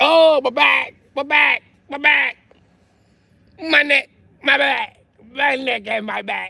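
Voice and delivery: very high drawn-out fake moan. Telling how he'd have jumped on the driver's windshield, acting out mock pain. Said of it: "I would have just jumped on her windshield like".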